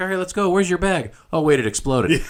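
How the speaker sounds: play-acted, giddy, super-excited, very high and swooping. Retelling a movie character greeting a boy who comes running out: imitating super excitement. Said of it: "she gets super excited".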